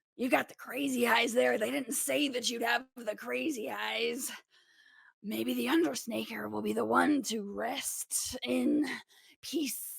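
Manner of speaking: growled voice. Game master voicing a wrestler who backs up and speaks to a player, growling. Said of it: "kind of growls".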